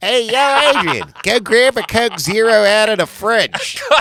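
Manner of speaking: very loud, high, shrill, booming Philadelphia accent. Saying he should have had a philly accent, the speaker does a philly accent. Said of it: "he should have had a Philly accent. Philly's like".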